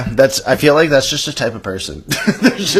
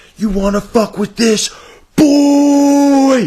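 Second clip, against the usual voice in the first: mock very high, intense hollering, "boy" stretched; 13 semitones higher, 5 dB louder than usual. Retelling how a man at a strip club yelled into his phone, imitating a yell into phone. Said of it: "he yells into his phone".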